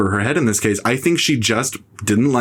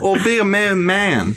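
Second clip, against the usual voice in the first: put-on Vietnamese accent, pitched up, words drawn out; 9 semitones higher than usual. Recalling a famous film scene, quoting a line in a Vietnamese accent. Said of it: "That's my Vietnamese accent".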